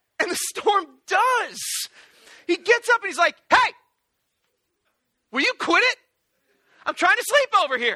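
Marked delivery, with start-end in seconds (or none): 3.5-8.0 high, loud, annoyed complaining tone.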